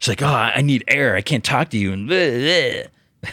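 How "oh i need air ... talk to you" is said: put-on angry voice, higher. Retelling a scene from the show: imitating angry Felicity. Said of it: "she's so angry".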